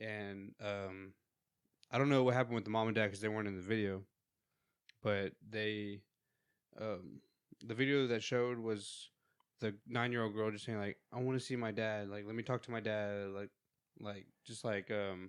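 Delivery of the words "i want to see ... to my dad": acted hysterical crying while talking. Speaker retells a nine-year-old girl in a video, imitating hysterical crying. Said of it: "hysterically like crying".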